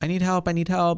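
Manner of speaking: high, panicked, pleading cry. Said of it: "freaking out".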